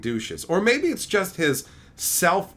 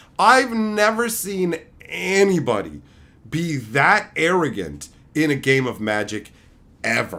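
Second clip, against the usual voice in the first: ordinary talk, nothing marked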